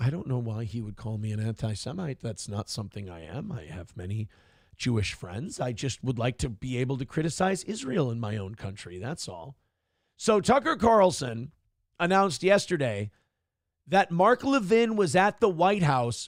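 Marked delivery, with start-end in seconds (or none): 0.0-9.5 soft, cool, calm, composed, unbothered voice. Imitating Tucker Carlson answering a yelling accuser: Tucker Carlson impression, calm and smiling. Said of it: "just smiling at him and going".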